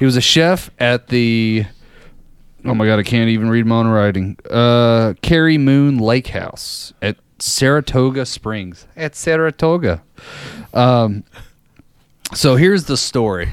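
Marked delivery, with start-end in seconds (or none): 9.0-10.0 fake, put-on Canadian Midwestern accent. Reading a place name from notes, Canadian Midwestern accent. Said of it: "What kind of accent was that?".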